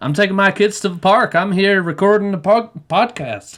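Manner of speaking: put-on country accent, very high and loud. Asked to try the phrase once more, speaker does it in a country accent. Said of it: "it always sounds country".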